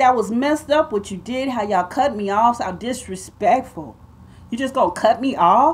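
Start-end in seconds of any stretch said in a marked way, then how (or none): none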